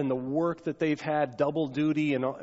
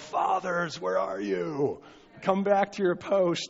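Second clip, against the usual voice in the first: mild, held-back, acted-out bellowing call; 3 semitones higher than usual. Imitating a father calling out to fathers: imitating Dennis Trout bellowing.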